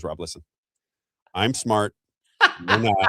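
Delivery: mocking, lilting, swooping teasing tone. Teasing the other speaker by quoting them: teasing imitation of Isaiah. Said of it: "He goes".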